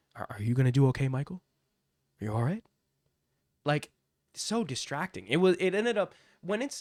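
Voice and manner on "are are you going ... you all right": muttered under the breath. Mocking a commentator's constant check-ins: imitating Joe Tessitore under his breath. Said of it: "Under his breath".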